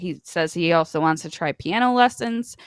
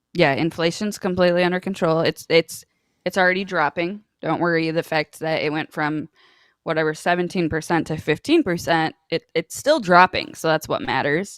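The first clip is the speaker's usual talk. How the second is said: ordinary talk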